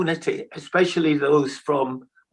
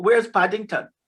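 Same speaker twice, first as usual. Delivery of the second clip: put-on, bad, rough, high-pitched Jamaican accent; 5 semitones higher than usual. Retelling asking people on the street for directions off the ship, jamaican accent. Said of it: "I said in a Jamaican accent".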